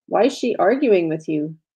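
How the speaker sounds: ordinary delivery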